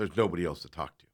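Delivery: mock crappy rude tone. Retelling a complaint about services, the speaker quotes the man's reply; imitating a crappy rude tone. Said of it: "he said it like really crappy".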